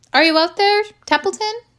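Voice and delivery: very high, hurried, quick calling voice. Narrator reading Wilbur calling for Templeton, calling out. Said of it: "called Wilbur".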